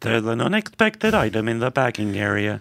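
machine-like, robotic announcement voice. Player mimics the bagging-area announcement in a voice game, robotic self-checkout voice. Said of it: "That would be like a robotic voice".

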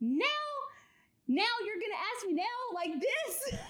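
very high-pitched, shrieking, incredulous scream. Retelling the moment of a proposal on one knee: imitating own screaming. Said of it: "I'm literally screaming at him".

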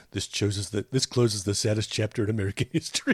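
deeply somber, solemn, grave voice. Quoting Homer closing a sad chapter: Homer's somber voice. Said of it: "when he puts on his really somber voice like that".

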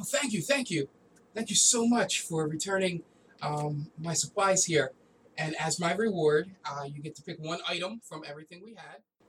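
eager, gushing, excited, grateful voice. Voicing a shopkeeper greeting the party as they walk in: excited shopkeeper voice. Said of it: "he gets all excited when you see guys walk in".

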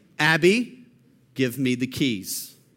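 stern, no-nonsense, low, slow, firm voice. Recounting trying to get the keys away from her, retelling saying it firmly. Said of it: "I will say in a firm voice".

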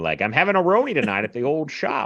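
put-on old-fashioned, bygone-era, old-timey voice. Joking about a strange-sounding term, saying it in an old-timey voice. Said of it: "I love doing old timey voices".

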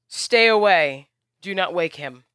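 loud shrieking scream. Game master voicing a wounded flying figure as she rises into the sky, screaming. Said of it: "And she screams".

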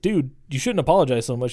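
ordinary delivery

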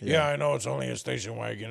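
macho seventies man voice. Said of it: "I don't know why I'm making them all talk like that".

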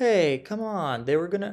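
put-on rough East Coast accent. Quoting a man from the East Coast, in a put-on East Coast accent. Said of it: "is that an east coast accent".

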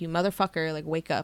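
plain

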